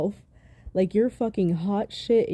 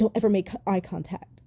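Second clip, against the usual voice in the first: put-on abrasive tone. Retelling what Amber Heard said to her mother in a clip: imitating an abrasive tone. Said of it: "in this real abrasive tone".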